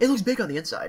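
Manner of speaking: put-on smarmy British accent. Joking while a friend describes a scene, in a smarmy british accent. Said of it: "in a smarmy British accent".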